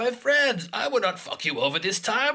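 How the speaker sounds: very high reassuring voice. Imitating what Hondo says every time he shows up: Hondo impression. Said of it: "Hondo is just, every time he, he shows up, he's just like".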